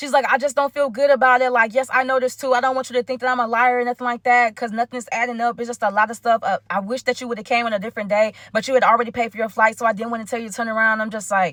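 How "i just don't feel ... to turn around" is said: ordinary talk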